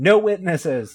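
sudden shout, high and loud. Recounting a movie scene where the santa character kicks them out, retelling a shout. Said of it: "and just shouts".

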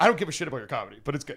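flat, matter-of-fact delivery. Retelling feedback on comedy given outside, imitating a matter-of-fact delivery. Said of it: "said it, like, very matter-of-factly".

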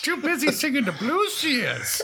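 very high character voice with swooping pitch. Continuing a Queen impression that drifts into Yoda voice. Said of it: "Now she sounds like Yoda".

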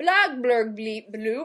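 unintelligible mumbling, sounds mushed into nonsense. Reading out a note on a character who can't be understood: imitating Cogburn's unintelligible mumble. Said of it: "because you can't understand him".

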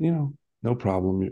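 whispered speech. Retelling a whispered reply after a hug: retelling own whisper. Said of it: "I whispered back".

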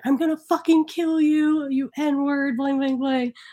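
mock screaming, toned down to half strength. Retelling a man screaming at his probation officer, imitating someone screaming. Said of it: "he's like screaming at his probation officer and he's like".

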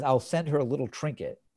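ordinary talk

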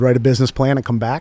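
usual speaking voice

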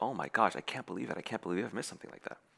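acted devastated tone. The speaker acts out how a man reacted to bad news, imitating devastation. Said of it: "he's totally devastated".

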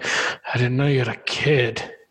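put-on disappointed delivery. Discussing a film scene, quoting the kidnapper, imitating the Zodiac, disappointed. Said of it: "You can almost hear the disappointment in his voice".

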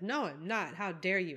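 put-on very thick, heavy Cockney accent. Recapping a scene, answering Steven's question as Dodo: Dodo's thick Cockney accent. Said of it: "In her very thick Cockney accent".

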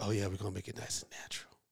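quiet, hushed whisper. Retelling what a barber said while cutting hair: imitating a whisper. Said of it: "he whispered to me".

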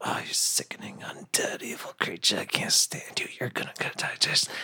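venomous, breathy, hissed whisper. Describing a character whispering insults at an undead creature: whispering insults in character. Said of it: "I start whispering at it".

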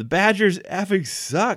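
put-on very high, shouted outburst. Retelling how a drunk fan yelled out to no one: imitating a fan yelling. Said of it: "just yells out towards".

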